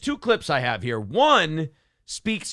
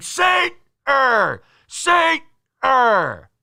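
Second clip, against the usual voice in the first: very high, long-stretched heckling shout; 10 semitones higher, 6 dB louder than usual. Retelling a fan yelling at them in public: imitating someone yelling.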